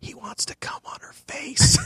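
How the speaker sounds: slow, drawn-out whisper.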